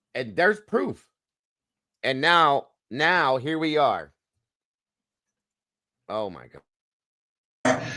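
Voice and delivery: fuming, slow, drawn-out, really mad words. Reacting to footage just seen as proof of what they did: really mad. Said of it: "I am so mad after what I just saw him do".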